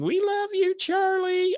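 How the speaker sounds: very high-pitched, acted-out yell. Retelling what a concert fan next to him kept yelling: imitating a fan yelling. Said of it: "sitting to my left yelling".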